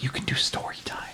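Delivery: whispered voice. Retelling what Sam whispered to the speaker: whispering. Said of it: "Sam whispers like".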